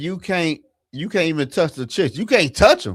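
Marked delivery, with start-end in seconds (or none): none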